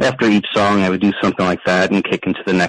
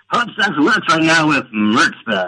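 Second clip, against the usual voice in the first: classic swooping AM radio disc jockey patter; 9 semitones higher than usual. Asked by the host to do it, announce a new record in an AM radio DJ voice. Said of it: "I just want to hear you do the AM radio voice".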